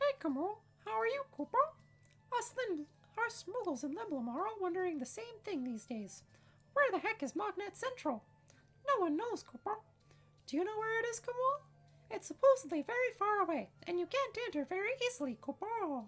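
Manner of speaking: very high, loud, cute creature chatter. Reading moogle dialogue aloud while playing a game, in a moogle voice. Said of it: "so here we have [name]. We're going to give him his letter. / A letter, [name]?".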